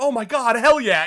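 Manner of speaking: thrilled, excited burst of delight. Retelling a character's reaction to tripping backwards: imitating an excited character. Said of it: "she's just, like, excited".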